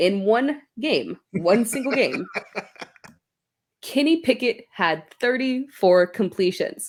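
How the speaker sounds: very slow, word by word. Breaking down a player's passing stats, saying it very slowly. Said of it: "I will say it very slowly".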